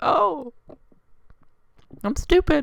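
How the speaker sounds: high-pitched, sheepish voice. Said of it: "I'm like".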